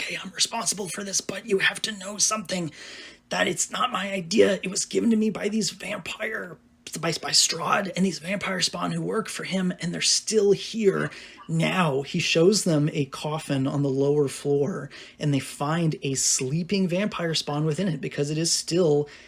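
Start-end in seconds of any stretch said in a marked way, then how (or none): 0.0-12.0 put-on whisper, higher pitched. A storyteller acts out a shaken man confessing to the party, retelling a whisper. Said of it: "he drops his voice to a whisper".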